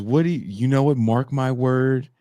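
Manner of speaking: exasperated, frustrated, insistent man's voice, pitched high. Retelling an argument between two men, imitating a frustrated man. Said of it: "This dude is, he's frustrated at this point".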